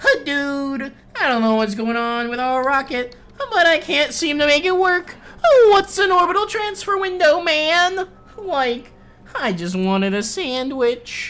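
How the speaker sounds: very high, loud, slow cartoon voice. Showing off a cartoon impression he says he does well: Shaggy voice. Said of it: "I can do a pretty good Shaggy".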